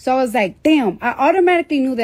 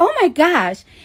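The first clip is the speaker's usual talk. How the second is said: put-on Staten Island accent, higher; 7 semitones higher than usual.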